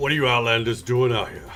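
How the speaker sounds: put-on fast growling voice with heavy Jersey accent. A game master voicing one of a group confronting the players, growling. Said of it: "you hear a growl emanate from one of them".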